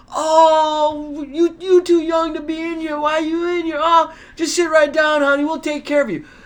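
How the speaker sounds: very high, loud cooing, long drawn-out "oh". Retelling how a lady answered a question in front of everybody: imitating loud cooing. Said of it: "super loudly starts cooing me".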